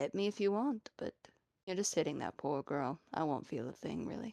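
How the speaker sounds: deep, low character voice. Voicing a deep voice speaking through a possessed girl: deep voice. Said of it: "the deep voice would again speak".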